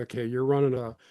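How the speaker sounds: ordinary talk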